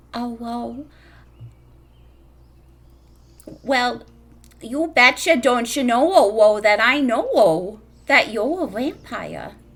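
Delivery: put-on Midwestern accent. Narrating a granny who leans in close to confide in you, midwestern accent. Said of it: "now I have to do Midwestern on purpose".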